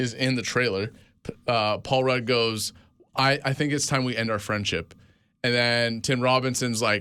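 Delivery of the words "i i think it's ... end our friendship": ordinary talk, nothing marked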